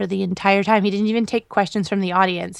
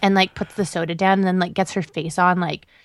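normal talking voice

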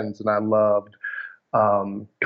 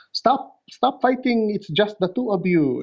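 put-on Filipino accent, pitched much higher; 11 semitones higher than usual. Recalling how their mom stopped fights between siblings, imitating mom's Filipino accent. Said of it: "her Filipino accent".

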